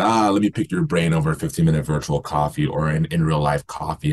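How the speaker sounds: normal talking voice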